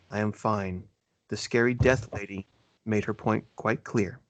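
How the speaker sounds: grave, dead-serious, solemn delivery. A game narrator voices a character answering the players, very serious voice. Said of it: "is a very serious voice says".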